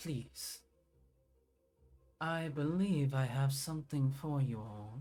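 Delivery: soft, gentle voice. As game master, voice someone greeting the party as two far doors open, in a soft voice. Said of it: "you hear a soft voice saying".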